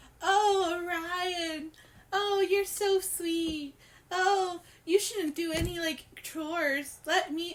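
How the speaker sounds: mock sycophantic, gushing, adoring, slow fawning voice. Mocking how he fawns over orion, in a mock-fawning imitation. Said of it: "he's like".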